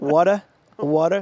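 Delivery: New York pronunciation. Showing how they pronounce a word that people point out, in a New York accent. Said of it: "Can you can you drop the New York accent?".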